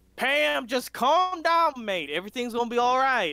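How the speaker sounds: yelling across a distance. Voicing a character who yells across the room: yelled across the room. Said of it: "you hear a yell across the room".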